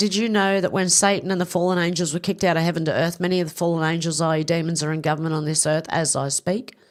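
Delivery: ordinary delivery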